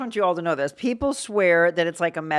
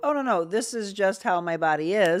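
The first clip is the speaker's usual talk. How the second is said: normal talking voice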